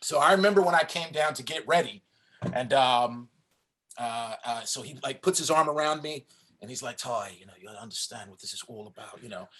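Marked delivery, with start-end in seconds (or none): 7.0-9.5 fast, rushed, confiding hushed half-whisper. Recalling the director putting an arm around the speaker, Tony Scott half-whisper impression. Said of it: "as he's whispering this to me".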